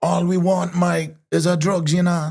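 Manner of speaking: put-on Jamaican accent, very high, slow. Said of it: "I put on a Jamaican accent".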